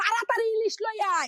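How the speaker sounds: put-on high, crying, scolding old grandmother voice.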